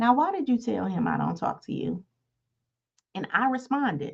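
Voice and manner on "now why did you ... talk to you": put-on whisper. Retelling hearing a whisper in the bathroom: retelling a whisper. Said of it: "And the whisper say".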